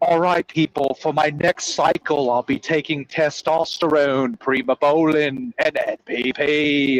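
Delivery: slow, put-on upper-class British royalty accent. Quoting a british guy he follows, imitating a british royalty accent. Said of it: "he sounds like British royalty".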